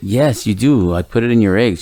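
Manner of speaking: plain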